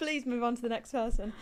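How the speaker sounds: normal talking voice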